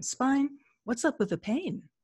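put-on detached, clinical, neutral, scientific curious tone. Speaker retells sitting down to ask their own spine about the pain: put-on neutral scientific curiosity. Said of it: "in the most neutral, scientific curiosity kind of voice".

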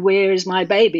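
ordinary delivery

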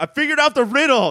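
very high, loud, full-throated screaming. Retelling a scene where Harvey, locked in a cell, yells: imitating Harvey screaming. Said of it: "just screaming".

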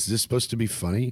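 mock deadpan delivery. Retelling what a three-and-a-half-year-old said about a joke, retelling a deadpan line. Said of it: "he said that just deadpan".

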